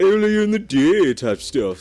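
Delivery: high, loud, mocking parroting voice. Repeating the other speaker's words back to tease: mocking imitation of other speaker. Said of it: "Did I seriously say it like that?".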